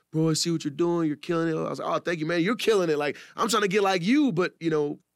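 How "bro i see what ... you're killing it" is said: voice on the edge of happy tears, near crying. Retelling what a man told him, imitating a man near tears. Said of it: "he was like damn near crying".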